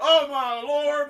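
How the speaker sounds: put-on very loud, shrill, high cry in southern accent. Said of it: "that's a southern ass".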